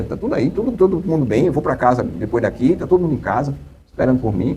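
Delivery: ordinary delivery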